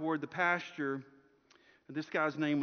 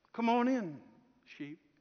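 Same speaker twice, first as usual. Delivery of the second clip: restrained, soft, high call-out; 7 semitones higher than usual. Telling a story, the speaker acts out Bill calling the sheep: not so loud call. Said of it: "in a not so loud voice".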